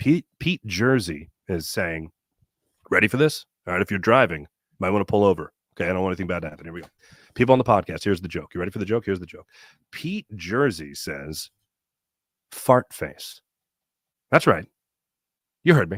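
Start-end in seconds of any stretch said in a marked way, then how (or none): 12.5-13.4 slow and much lower. Delivering a listener's joke to podcast listeners, said slowly. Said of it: "I'm going to say it slow".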